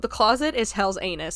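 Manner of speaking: ordinary talk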